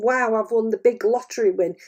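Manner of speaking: plain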